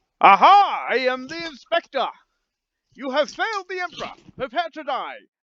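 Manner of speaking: showy, high, theatrical stage-villain style delivery. Playing the inspector condemning a kneeling man: theatrical performance. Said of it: "I do another performance check".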